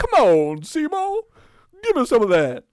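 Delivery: very high, loud, swooping, animated talking-plant squeal. Imagining the puppeteer performing the plant's lines: Frank Oz doing the plant voice. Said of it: "So imagine Frank Oz being like".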